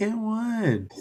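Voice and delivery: high-pitched, squeaky, mocking voice.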